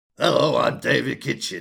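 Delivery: loud, rough, creaky put-on character voice. Introducing himself by that name, in a David Kitchen impression. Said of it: "my Dave Kitchen voice".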